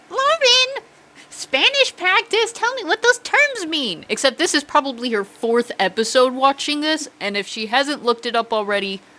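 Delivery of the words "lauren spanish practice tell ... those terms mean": very high motherly voice. Picturing her mom hearing the episode: imitating her mom. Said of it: "She's gonna be like".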